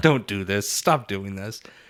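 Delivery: put-on nervous, pleading man's voice. Retelling how the Baron reacted to losing money, imitating the Baron nervously sweating. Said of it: "the Baron just sweat like".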